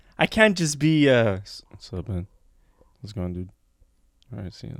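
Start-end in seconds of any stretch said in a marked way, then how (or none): 1.7-4.8 very quiet, casual, relaxed everyday voice. Showing how they talk when not on, casual at-home voice. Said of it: "This is me at home all day".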